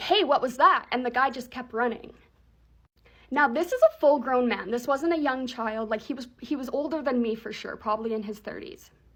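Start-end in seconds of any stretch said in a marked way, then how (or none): 0.0-0.9 loud, raised, shouted yell. Retelling calling out after being smacked in the face: retelling a yell. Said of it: "I yelled".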